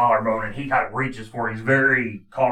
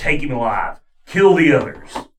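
loud, barked commander-style yelling; 3 semitones higher, 6 dB louder than usual. Voicing what another character is yelling at the group, retelling a yell. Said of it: "He's yelling".

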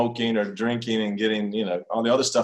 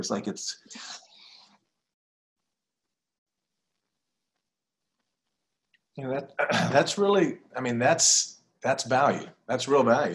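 teary, choked-up voice; 2 semitones higher than usual. Apologizing for getting emotional while speaking, teared up. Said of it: "I get teared up here".

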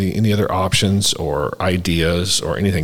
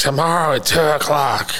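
put-on high, drawn-out called-out yell; 8 semitones higher than usual. Retelling an old man calling from a back office: imitating someone yelling. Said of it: "I could hear him yelling that".

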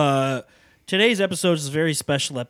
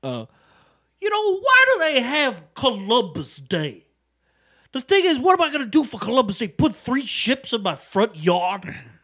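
high, slow, swooping stand-up comic voice; 7 semitones higher than usual. Doing a comedian impression of a Weekend Update bit, Chris Rock voice. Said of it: "can I do an impression of a... of a comedian right now?".

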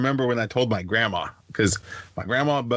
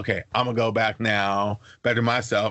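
ordinary talk

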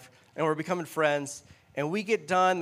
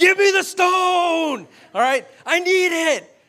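very high, frantic screaming with "stone" drawn out; 14 semitones higher, 10 dB louder than usual. Retelling a Catan game, screaming at the other player for stone. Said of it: "I'm screaming at the guy".

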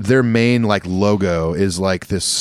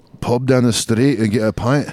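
put-on Scottish accent, put on; 3 semitones higher than usual. Retelling how an old Scottish guitar tech on tour talked, Scottish accent impression. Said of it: "talked like this".

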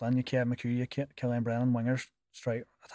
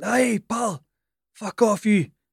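shrill, very loud, high-pitched Scottish yell; 10 semitones higher, 10 dB louder than usual. Speaker retells someone on the pitch shouting at them: retelling a shout, Scottish accent. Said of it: "and Scottish accent".

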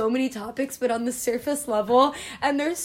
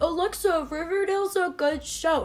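slow, dopey, mocking dumb-sounding voice; 4 semitones higher than usual. Imitating a listener defending a show: mocking imitation of a friend. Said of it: "Is that what he talks like?".

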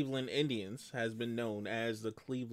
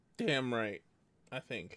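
voice cracking and breaking. Urged to tell the Yankees' rivals off, the speaker answers, voice cracking. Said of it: "Your voice cracked on the damn".

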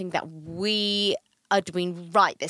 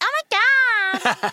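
rough put-on Liverpool accent, loud, very high, "God" stretched; 7 dB louder than usual. Retelling a baby shower moment when Gabby reacted: Gabby's Liverpool accent. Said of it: "in her Leeds accent".

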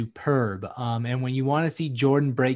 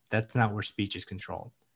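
put-on deadpan, soft, flat and dry; 4 semitones lower, 7 dB quieter than usual. Retelling how a man flatly answered a threat; imitating a deadpan reply. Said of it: "Jordan just deadpan stares at him and he goes".

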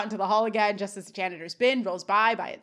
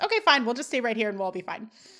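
ordinary delivery

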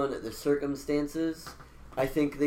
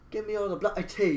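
put-on British accent, pitched up; 5 semitones higher than usual. Telling Dave what he said, quoting it in a British accent. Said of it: "he said it in a British accent".

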